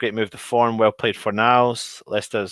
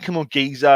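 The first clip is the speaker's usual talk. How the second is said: put-on Spanish accent, higher; 3 semitones higher than usual. Telling how a player wins over the fans: Pablo Fornals's Spanish accent. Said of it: "in his Spanish accent".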